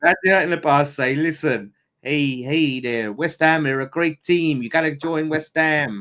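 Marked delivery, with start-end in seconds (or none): 0.9-6.0 put-on Canadian accent throughout. Play a Canadian former West Ham player convincing his countrymen, doing a Canadian impression. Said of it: "That's my Canadian impression".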